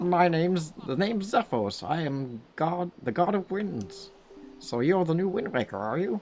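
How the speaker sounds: high-pitched frog voice. Voicing a game character's lines to Link, in a Zephos frog voice. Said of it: "That's the best frog voice I can do".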